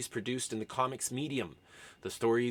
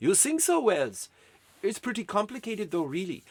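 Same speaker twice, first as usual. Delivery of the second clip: put-on German accent, pitched higher; 8 semitones higher than usual. Telling a made-up scene with Jules Verne and Wells, speaking in German accent as Jules Verne. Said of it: "I don't know why I'm doing a German accent for a Frenchman".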